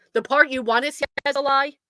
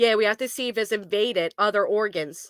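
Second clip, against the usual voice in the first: normal talking voice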